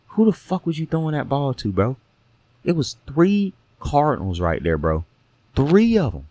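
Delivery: hushed whispering voice. Speaker addresses a player about a bad throw, whispering. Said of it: "I'm whispering because I don't want to hear".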